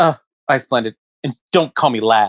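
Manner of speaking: very rude, snotty, nasty tone. Recalling someone's answer to being called lad, imitating a really rude reply. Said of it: "he said it like really shitty".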